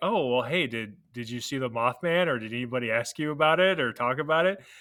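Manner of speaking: mock-joking playful delivery. Recalling what the speaker jokingly asked her, retelling a playful joke. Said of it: "And jokingly".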